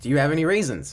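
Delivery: confident, self-assured delivery. Showing how to deliver a pickup line to a girl: confident, with a smile. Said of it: "say confidently with a smile on your face".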